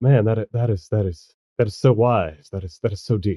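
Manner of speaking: quiet low character voice. Sable overhears a remark from down the hall, very quietly to herself. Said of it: "like very quietly to herself".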